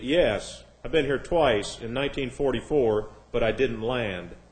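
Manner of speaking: ordinary talk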